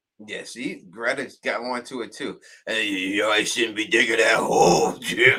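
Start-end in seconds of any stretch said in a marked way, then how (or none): 2.7-5.4 put-on gruff tough voice, louder. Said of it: "the second voice played the Batman role".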